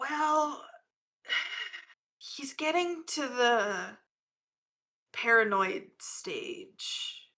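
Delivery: hushed, high, very slow whisper, the drawn out. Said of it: "she's making whisper".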